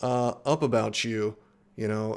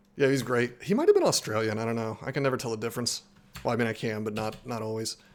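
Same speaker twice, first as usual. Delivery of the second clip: usual speaking voice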